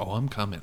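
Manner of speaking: put-on flat, deadpan delivery. Retelling a film caller's threatening line: imitating a flat delivery. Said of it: "the way he's, like, flat delivery".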